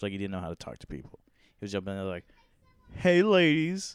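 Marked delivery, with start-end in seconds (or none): 3.0-4.0 strained, forced cocky swagger at a very high pitch. Retelling how a guy tried to talk to passing girls: imitating a forced cocky voice. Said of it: "like, in a voice, and it's like, and trying to be, trying to be cocky".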